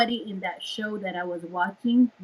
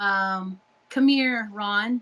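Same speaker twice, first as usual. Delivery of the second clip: ordinary talk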